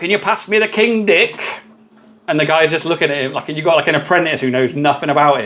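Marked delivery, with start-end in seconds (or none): 0.0-1.4 put-on northern English accent, pitched up. Imagining someone in a workshop asking a mate: northern english accent. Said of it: "I don't know why I had to do a northern accent for that".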